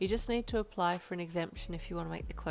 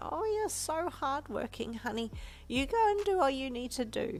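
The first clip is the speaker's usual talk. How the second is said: put-on pleasant, higher-pitched grandmotherly old lady voice; 7 semitones higher than usual. Narrator reading a grandmother's reply on a phone call; pleasant old lady voice. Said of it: "she said in her pleasant old lady voice".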